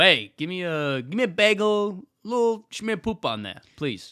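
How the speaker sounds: loud, high put-on Italian accent at full volume. Pretending to be Italian, ordering at the deli: acting as an Italian plumber. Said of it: "You can imagine being Italian".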